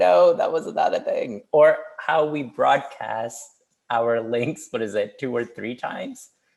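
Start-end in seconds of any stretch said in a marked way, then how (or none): 0.0-1.4 loud, high-pitched dismissiveness. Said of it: "would just be like".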